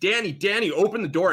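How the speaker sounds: high, loud screaming at the top of the lungs. Narrating a game scene, a character pounds on a locked office door, screaming. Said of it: "he's screaming".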